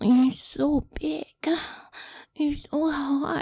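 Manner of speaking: put-on high, very loud baby-talk voice. Offering to do the baby voice if the listener wants, the speaker uses a baby voice. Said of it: "I can do the baby voice if you want".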